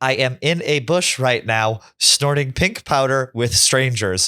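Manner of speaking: robotic, flat phone assistant voice. Retelling how the car read out a text aloud, in Siri voice. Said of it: "Joey's text said in Siri".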